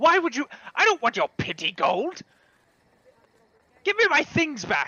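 high, loud, furious, heated shouting. A character refuses another's offered gold and demands things back, angry yelling. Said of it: "Please stop yelling".

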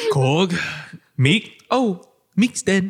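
put-on flat delivery. Recalling a jarring movie moment, the speaker gives a deadpan Korg impression. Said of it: "It was so deadpan like".

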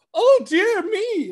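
very high, showy, flamboyant, frightened cartoon voice. Describing cartoon elephants scared of mice, doing their very flamboyant voice. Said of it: "they get like a very flamboyant voice".

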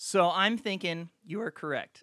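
voice breaking, cracking mid-line. Agreeing that the other speaker is correct: voice cracking. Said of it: "As my voice cracks".

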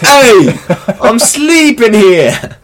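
put-on shrill, very high, very loud British accent. Acting out what a sleeper says, in a British-sounding accent. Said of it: "Why is it British?".

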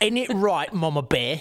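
put-on Cockney English accent. Talking about a crime family of characters and imitating them: cockney accent. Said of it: "with their Cockney English accents".

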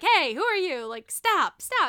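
loud, high-pitched, angry mad shouting. Recounting a man yelling at a woman for breaking in, retelling a yell. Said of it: "Dimitri's yelling at her".

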